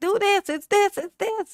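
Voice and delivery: very high, loud screaming.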